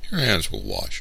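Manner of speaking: ordinary delivery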